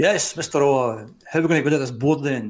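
put-on huge, big, booming voice. Retelling a phone call when a man comes on the line: big booming voice. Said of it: "this big booming voice comes on".

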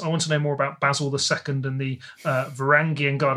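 ordinary talk

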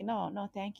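normal talking voice

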